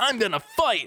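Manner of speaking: grave cartoon-hero voice. Recalling the hero when a fight got serious: imitating serious Goku. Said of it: "when it got serious, he was like".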